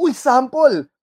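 high, loud, eager chirping voice.

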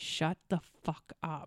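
slow, hushed whispered mutter under the breath. Retelling telling the loud guys to shut up: retelling a quiet mutter. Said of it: "quiet enough that Jenny, so Jenny can't hear me".

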